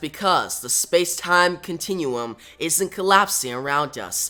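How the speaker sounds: ordinary talk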